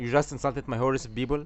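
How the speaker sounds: usual speaking voice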